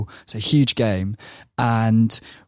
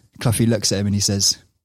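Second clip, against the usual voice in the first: normal talking voice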